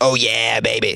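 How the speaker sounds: throaty on-air host delivery. Plugging the show's phone lines, imitating a radio guy: throaty radio guy voice. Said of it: "perfect throaty situation to do that guy".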